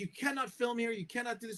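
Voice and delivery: high, held-back irate male voice. Retelling a man who stopped their filming, imitating an angry man. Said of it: "this guy's really mad".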